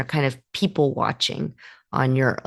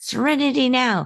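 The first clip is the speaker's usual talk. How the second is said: high, mock yell. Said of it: "George is running around forcing serenity and yelling".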